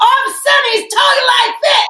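very high, sudden, escalating yelling. Describing how he suddenly talks on Zoom, imitating him yelling. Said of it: "That's a really good impression".

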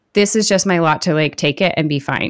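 ordinary talk

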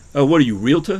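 loud, put-on Bronx New York accent. Asked to say the line in a Bronx accent: Bronx accent. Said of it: "Say in your Bronx accent".

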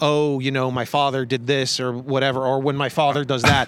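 ordinary talk, nothing marked

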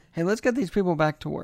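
ordinary talk, nothing marked

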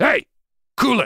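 piercing, very high, loud yelling. Describing walking into crowded bars to stop fights: yelling. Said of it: "I'll yell".

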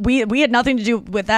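normal talking voice

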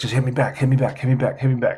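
whispering voice. Retelling an opponent's taunt during a game: imitating someone whispering. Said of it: "whispering it to me".

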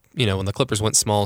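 ordinary talk

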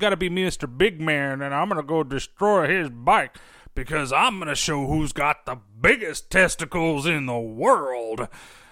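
put-on rural countryman's accent. Voicing a biker's boasting while recapping a movie scene: put-on countryman accent. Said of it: "why did I start talking like a countryman there".

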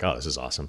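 heavily sarcastic delivery. Retelling a reaction to fired coaches saying nothing on tv: imitating a sarcastic reaction. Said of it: "and I'm being sarcastic".

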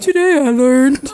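very loud, cranked-up voice. Reading a fact aloud in another speaker's voice, on request: Antonio voice impression. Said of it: "It's [name] doing Antonio's voice".

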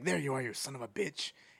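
hoarse, rasping villain voice. Recounting a line a movie character says to him, in a rasping voice. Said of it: "He has his, like, voice that's rasping".

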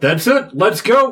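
loud, high calling out, as from afar. Voicing an unseen figure further up the ship: calling out loudly. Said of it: "Like a voice calling out".

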